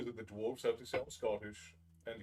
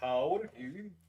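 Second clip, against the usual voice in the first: loud, throaty voice pushed from the back of the throat; 4 semitones higher, 5 dB louder than usual. Repeating a practice phrase back and forth, voiced from the back of the throat. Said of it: "back of your throat".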